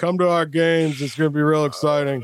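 dead-level flat monotone with zero energy. Retelling an ad Kiffin did, the speaker gives a monotone Kiffin impression. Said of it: "like monotoned it for like".

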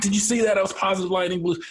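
berserk, very high-pitched, excited, rattled-off outburst. Retelling stopping the car over a lightning strike: imitating own excited outburst. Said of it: "I just stopped the car and went berserk".

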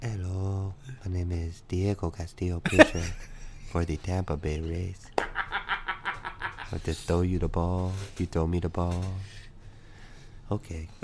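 low, soft whisper throughout. Doing a bit as Diego Castillo, in a whispered Diego Castillo impression. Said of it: "it looks like he speaks only in a whisper".

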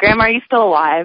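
ordinary talk

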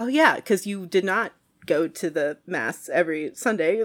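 ordinary talk

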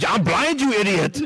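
put-on Austrian accent, yelled. Imagining Arnold Schwarzenegger yelling at a woman: Arnold Schwarzenegger impression. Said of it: "If you imagine if it's Arnold Schwarzenegger yelling at her, it's like".

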